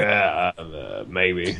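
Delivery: very low, soft, growly voice. Retelling a guy's reply to a question, in a low growl voice. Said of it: "that low like that growl voice".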